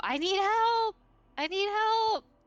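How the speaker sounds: very high-pitched, loud yell. A player voices her character going straight in, starting to yell for help. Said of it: "starting to yell out".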